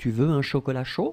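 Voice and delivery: pitch rising upward on chaud. French lesson on asking a question: rising on chaud. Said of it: "you raise the voice".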